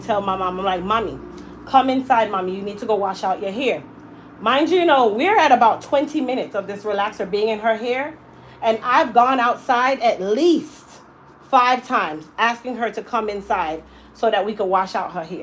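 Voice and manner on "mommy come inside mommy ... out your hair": plain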